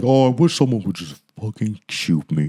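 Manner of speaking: utterly depressed cartoon donkey voice. Arguing which character said the line, imitating Eeyore: Eeyore voice. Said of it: "Eeyore was the one that was like".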